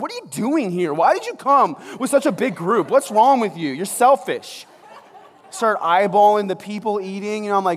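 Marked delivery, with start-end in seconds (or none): 0.0-4.6 angry, annoyed, accusing rant, loud and high. Retelling getting mad at other people waiting: retelling own angry outburst. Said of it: "I get mad at them".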